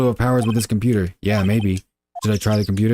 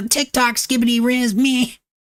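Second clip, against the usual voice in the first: mock teenage girl voice, higher; 13 semitones higher than usual. Voicing a game character after saying the voice can't be done: put-on seventeen-year-old girl voice. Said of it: "I can't do a seventeen-year-old go-, girl voice".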